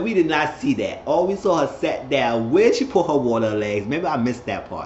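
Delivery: ordinary delivery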